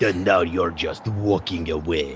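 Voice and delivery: drawn-out, low, slow fake Russian accent. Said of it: "a fucking Russian accent".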